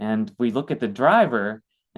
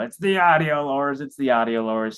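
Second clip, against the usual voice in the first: grumbling, complaining, griping voice; 4 semitones higher than usual. Retelling what the land manager kept saying: imitating someone complaining. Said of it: "he was really complaining".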